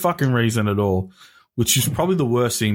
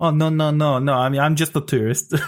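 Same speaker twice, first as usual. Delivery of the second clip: put-on assumed Chinese accent; 5 semitones higher than usual. Retelling a man's reply when challenged to a fight, in a Chinese accent. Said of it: "Like in a Chinese accent".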